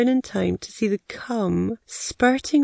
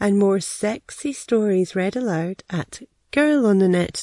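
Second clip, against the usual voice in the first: usual speaking voice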